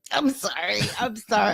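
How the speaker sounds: words broken up by giggles. Apologizing for an outburst while holding back laughter: laughing while apologizing. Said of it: "I'm trying to stop myself from my outburst".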